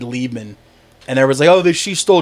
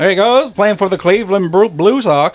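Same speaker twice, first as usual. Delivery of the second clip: put-on old-time announcer accent, higher; 5 semitones higher than usual. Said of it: "The nice mid-Atlantic accent".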